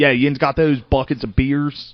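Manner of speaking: put-on loud, high Baltimore accent. Retelling what a comic on the show said: imitating Baltimore accent. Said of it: "Baltimore basically has a Baltimore".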